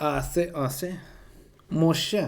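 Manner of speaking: fake, fancy, put-on French accent. Showing a put-on French accent. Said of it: "a French accent".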